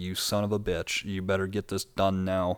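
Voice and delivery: tearful, crying voice. Retelling own words during painful bone drilling, imitating own crying while cursing. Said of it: "I was bawling my eyes out and crying like".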